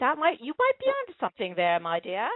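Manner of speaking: bad put-on English accent.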